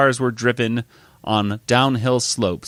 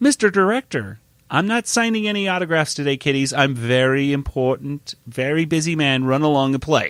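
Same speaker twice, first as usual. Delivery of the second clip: terrible, pompous, self-important big-shot director voice impression; 4 semitones higher than usual. Retelling a scene where the director character shows up, terrible Mr. Director impression. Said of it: "That's a terrible Mr. Director impression".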